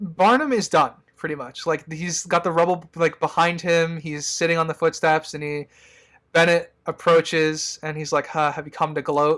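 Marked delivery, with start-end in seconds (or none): 8.3-9.4 put-on mocking tone. Retelling a movie scene where one character approaches another: imitating a mocking tone. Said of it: "Kind of, you know, mockingly".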